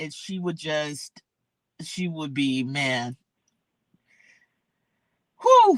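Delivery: holding back tears, words breaking off, swooping and slow. Remembering someone who loved yacht rock and travel: holding back tears. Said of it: "I'm trying not to get emotional".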